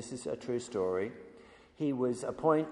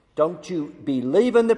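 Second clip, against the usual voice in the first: very loud, high, bad, hideous Irish accent; 5 semitones higher, 12 dB louder than usual. Telling a story, quoting an old Irish priest to a young priest, in a bad Irish accent. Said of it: "My Irish accent is hideous".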